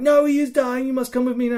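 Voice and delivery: very high, shrill shout. Retelling own plea to the physics to come along: imitating own yelling. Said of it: "yelling for a physic to come with me".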